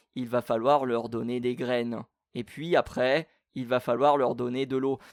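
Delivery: flat, dull, dreary, colourless, neutral monotone. Imitating an instructional voice-over: flat, neutral, dull voice. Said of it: "une voix plutôt euh, morne, plutôt, euh, euh, comment dire, neutre".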